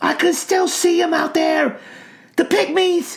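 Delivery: put-on shrill little boy hollering, very high. Narrator reads a squirming boy under a ranger's arm, hollering little boy. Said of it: "hollering as loud as his little voice would manage".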